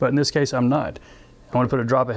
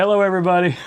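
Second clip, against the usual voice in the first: giggling through words, higher pitch; 6 semitones higher, 3 dB louder than usual. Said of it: "am I gonna be doing another laughing fit?".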